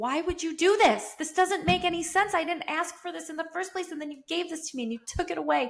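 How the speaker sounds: acted-out high, screaming, demanding yelling. Retelling yelling at god while sitting in a car: imitating own past yelling. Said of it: "I remember just yelling at him".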